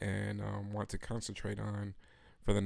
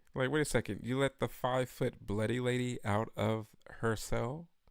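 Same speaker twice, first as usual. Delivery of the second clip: plain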